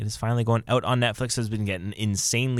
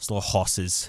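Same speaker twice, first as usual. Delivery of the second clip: British accent; 3 semitones lower than usual. Saying a show title as the British say it, British accent. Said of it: "as they say in the British accent".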